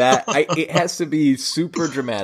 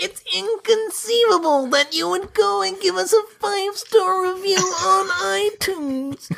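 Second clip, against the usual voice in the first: very high-pitched character voice. Asked by a co-host to do Vizzini asking for reviews, Vizzini voice. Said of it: "can you do Vicini asking for?".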